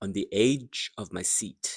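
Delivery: "edge" and "seat" drawn out and hit hard. Teaching sentence stress in a phrase, edge and seat stressed, lengthened. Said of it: "the stress words are edge and seat. So they are stressed and they are longer".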